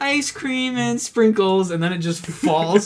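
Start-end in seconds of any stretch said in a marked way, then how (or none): 0.0-1.7 put-on high-pitched, delighted, happy little-boy voice. Retelling a video of a little boy with ice cream: imitating a happy little boy. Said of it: "so happy to have his ice cream, and he's like".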